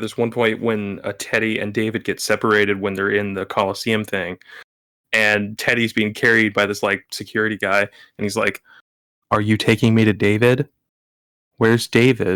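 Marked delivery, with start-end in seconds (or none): 9.3-12.4 dead flat, creepy monotone. Recounting a film scene where Teddy is carried off, in Teddy's monotone voice. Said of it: "most monotone voice".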